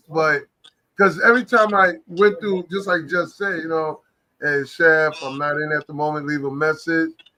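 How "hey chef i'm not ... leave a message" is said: plain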